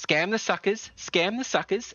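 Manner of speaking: parrot-like mimic voice. Voicing a parrot that repeats its owner's words: parrot mimicking the merchant's voice. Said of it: "it says back in his voice".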